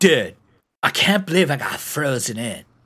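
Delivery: odd, discontented speaking manner. Retelling what a coworker said about getting frozen in: imitating a coworker's way of talking. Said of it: "he literally talked like this".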